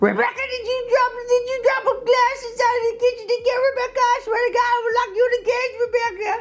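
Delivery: put-on very high, shrill, scolding old-lady yell. Drag performer scolding a character named Rebecca, yelling in an old lady voice. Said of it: "I'm always yelling at her in an old lady voice".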